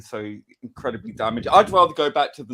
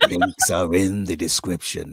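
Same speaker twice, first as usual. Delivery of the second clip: put-on sultry, mock seductive voice, lower pitch; 6 semitones lower than usual. Reading a channel donation appeal on request: put-on sultry voice. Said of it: "say it in a much more sultry voice".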